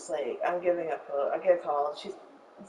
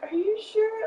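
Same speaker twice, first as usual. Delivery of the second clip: put-on bawling, crying voice, higher pitch. Retelling asking a roommate if the dog is hers: imitating own past bawling. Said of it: "crying, bawling".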